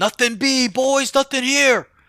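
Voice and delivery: exaggerated, overblown call-out, very high and loud. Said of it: "I'm over-exaggerating".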